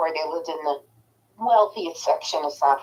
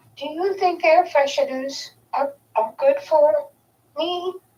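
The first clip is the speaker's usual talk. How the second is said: very high, sweetest tiny little voice; 10 semitones higher than usual. Retelling how he asked his question, mimicking a sweet little voice. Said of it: "in the sweetest little voice".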